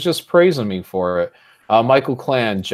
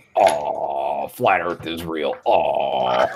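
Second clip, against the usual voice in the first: very deep, slow, dragged-out drawl on aw; 10 semitones lower, 3 dB quieter than usual. Reacting to a chat insult with an impression of oneself. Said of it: "Was that [name] doing an impression of [name]?".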